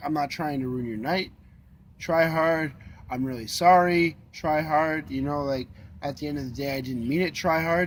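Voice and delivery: ordinary talk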